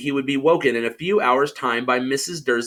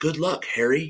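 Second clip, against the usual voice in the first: quiet, soft, gentle murmured words; 4 dB quieter than usual. Reading a story aloud, Dumbledore bidding farewell: Dumbledore, murmuring. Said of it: "he murmured".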